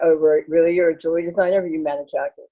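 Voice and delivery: ordinary talk, nothing marked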